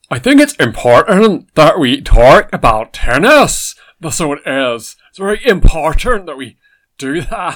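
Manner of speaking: booming preacher voice, drawn out slowly. Doing an impression of a person talking about tennis: Ian Paisley impression. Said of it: "It is the Reverend Ian Paisley".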